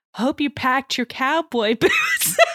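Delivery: gentle, swooping, timid, careful delivery. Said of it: "very gently puts the plane tickets down".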